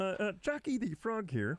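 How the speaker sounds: very high-pitched puppet cartoon frog voice. Joking as a frog jockey: Kermit the Frog voice. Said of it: "It's really sliding Kermit".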